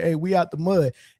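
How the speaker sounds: ordinary talk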